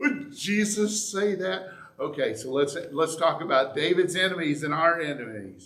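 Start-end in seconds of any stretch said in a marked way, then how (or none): 0.0-1.7 high, slow, incredulous, doubting tone. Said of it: "make us go".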